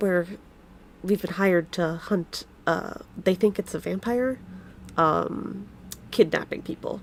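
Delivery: secretive, barely voiced, hushed whisper under the breath. Voicing a character telling the group about the hired hunt: whispering under his breath. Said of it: "whispers to you guys under his breath".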